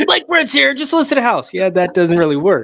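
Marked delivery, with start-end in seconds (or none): 0.3-1.5 very high-pitched infomercial TV ad voice. Describing early recordings that sounded too much like a commercial; Billy Mays pitchman impression. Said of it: "way too much like a commercial".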